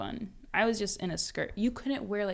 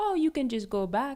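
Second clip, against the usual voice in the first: put-on Haitian-accented speech; 6 semitones higher, 4 dB louder than usual. Imitating a grandmother asking about college: imitating grandmother's Haitian accent. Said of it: "I should do the accent".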